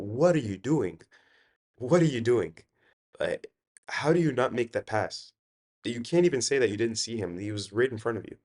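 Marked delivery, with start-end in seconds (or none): 0.0-5.3 mock yelled screaming rant. After a missed pass, speaker recalls reacting at home; retelling screaming at the TV. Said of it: "And I'm screaming at my television set".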